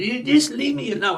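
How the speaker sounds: put-on very high squawking voice of a crying child. Retelling her turn at forty-two, imitating eight-year-old Carter. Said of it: "I was talking like eight-year-old Carter".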